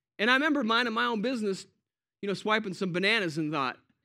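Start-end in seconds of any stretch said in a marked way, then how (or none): none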